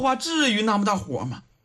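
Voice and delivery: ordinary delivery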